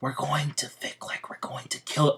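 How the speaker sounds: soft, hushed whisper under the breath. Retelling a story, telling what Asta says about Plan B, whispering. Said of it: "I don't know why I'm whispering".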